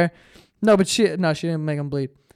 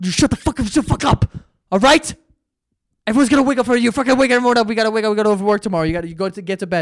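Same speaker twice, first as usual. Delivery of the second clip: put-on angry, irate, motherly-sounding voice; 4 semitones higher than usual. Retelling their mom kicking the door down, imitating angry mom yelling. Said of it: "fucking kick our door down and be like".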